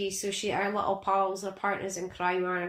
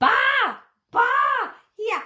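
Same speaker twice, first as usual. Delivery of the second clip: put-on high, loud toddler-like shout. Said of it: "she's shouting".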